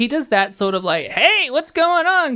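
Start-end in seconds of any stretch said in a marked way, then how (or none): 1.1-2.4 very high, gravelly, slow drawl. Imitating how a cartoon character talks: Chris Rock kind of voice. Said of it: "almost like a Chris Rock kind of voice".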